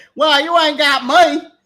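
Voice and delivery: thick, full-on put-on East Texas accent. Mocking the other speaker's impression: imitating a Texas accent. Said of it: "you got Texas".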